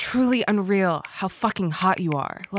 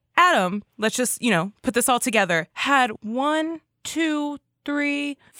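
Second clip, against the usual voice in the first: plain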